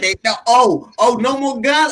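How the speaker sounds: ordinary delivery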